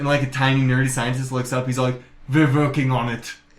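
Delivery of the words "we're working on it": put-on Austrian accent impression. Retelling a movie scene where a tiny scientist answers a general: Arnold Schwarzenegger voice. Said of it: "this little scientist has Arnold's voice".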